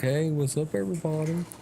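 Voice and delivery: put-on laid-back, easygoing, calm, mellow old hippie voice. Imitating an older hippie on social media: imitating a calm old hippie. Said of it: "he talks real calm".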